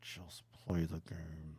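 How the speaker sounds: put-on mutter through teeth. Retelling what a friend said to him, muttering it through his teeth. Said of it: "hear it under his, his like teeth".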